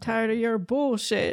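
put-on tired voice. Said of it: "Is that a me voice?".

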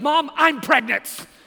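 high, very loud, sudden leaping-up yell. Retelling how the speaker's wife jumped off the couch toward her mom, retelling a yell. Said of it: "jumps out of the seat of the couch and yells".

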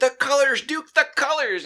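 high, loud freaked-out yell. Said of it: "this dude would be freaking out".

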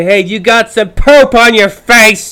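loud, slow, high mock yell. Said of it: "yell at somebody else and say".

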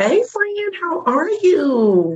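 tiny, very high, sing-song little voice. Guest greeting the host right after being introduced, little voice. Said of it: "Don't come on with that little voice".

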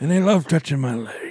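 put-on creepy elderly man voice. Quoting Joe Biden on learning to ski: Joe Biden impression. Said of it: "you're quoting him, right?".

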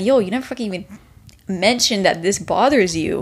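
ordinary talk

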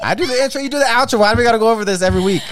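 very high, shrill, pitched-way-up shout. Telling a fellow host who does the intro and outro; yelling. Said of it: "You ain't got to yell".

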